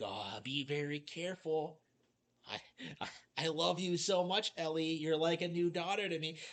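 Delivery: put-on, cheesy, corny mock delivery. Mocking how game characters talk while walking: mocking The Last of Us characters. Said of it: "the characters are walking and they're just like".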